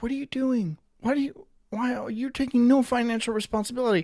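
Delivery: shrill, very high, shouted screaming rant. Describing a show where a man screams at people, imitating someone screaming. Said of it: "the dude just screams at them".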